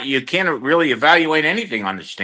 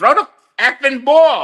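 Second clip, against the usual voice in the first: mock, furious, angry hollering and screaming; 7 semitones higher than usual. Retelling yelling at a player during the game: retelling own screaming. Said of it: "I'm sitting there screaming the whole game".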